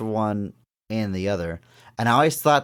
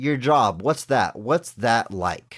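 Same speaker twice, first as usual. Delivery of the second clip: mock bored, uninterested, indifferent tone. Describing a movie scene, quoting the man asking about her job, mimicking boredom. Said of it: "Just like he doesn't really care".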